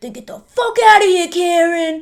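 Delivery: acted, shrill, very loud, very high aggressive shout. Retelling a film scene, quoting the character Eddie: imitating Eddie aggressively. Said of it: "just really aggressive".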